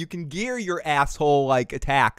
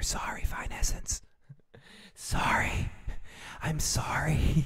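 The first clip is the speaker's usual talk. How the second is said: slow, barely audible, very quiet whisper; 2 semitones lower, 9 dB quieter than usual. Performing a requested line in a whisper: whispering an apology. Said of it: "you have to whisper".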